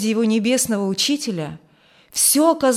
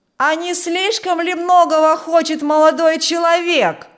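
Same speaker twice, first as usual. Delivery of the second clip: raised, pitched-up shout; 7 semitones higher, 4 dB louder than usual. Someone among a group of men calls out to a young man who came asking for someone: shouting. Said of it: "крикнул ему кто-то".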